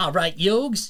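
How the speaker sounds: Brooklyn accent. Talking about different accents, giving an example: Brooklyn accent. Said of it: "The the Brooklyn accent".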